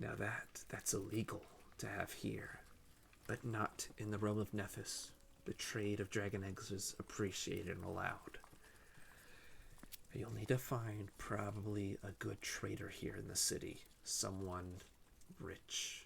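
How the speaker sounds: quiet whisper in character. Voicing the checker, who whispers to a player so others can't hear: whispering in character. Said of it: "He starts whispering to you".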